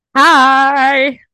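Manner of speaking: booming, very loud, drawn-out delivery. Greeting listeners as the episode opens: loud hi. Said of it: "That was a loud hi".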